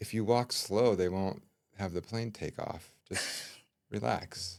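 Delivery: soft, hushed, private whisper. Retelling calming a stressed traveler at the airport: imitating own whisper.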